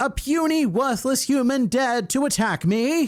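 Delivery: high-pitched, enraged screaming.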